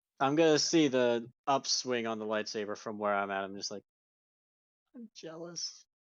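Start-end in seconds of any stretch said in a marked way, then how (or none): 5.0-5.8 very quiet, hushed mutter under breath. Playing a character watching another's lightsaber: muttered under the breath. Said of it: "It's just under my breath".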